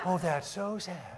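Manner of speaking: soft, mock-pitying sigh.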